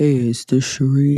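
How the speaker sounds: very deep bass radio-style voice. Retelling how Adam phoned after getting the number, imitating Adam's deep voice. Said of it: "his voice is deeper than that".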